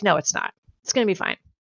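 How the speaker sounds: put-on calm reassuring tone. Retelling a garden panic, you repeat how your partner reassured you, with mock calm reassurance. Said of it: "and I freaked out".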